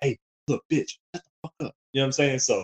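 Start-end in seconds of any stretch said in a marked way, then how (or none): 0.0-1.8 angry, fighting-mad whisper. Retelling a silent argument with an ex-girlfriend, retelling a whisper. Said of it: "you're kind of like whispering like".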